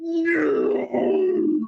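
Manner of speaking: very high, shrill, furious, raging scream. Acting out a character who screams at a fallen creature: screaming. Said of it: "he screams at it".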